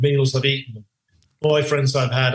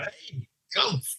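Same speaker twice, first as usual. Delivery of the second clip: put-on scream, higher pitched; 6 semitones higher, 9 dB quieter than usual. Retelling an immigration officer calling his friends over: imitating a scream. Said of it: "he straight away screamed out".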